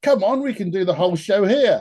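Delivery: wry, sarcastic, half-mocking delivery. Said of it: "Lennon kind of sarcastically goes".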